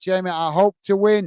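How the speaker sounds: ordinary talk, nothing marked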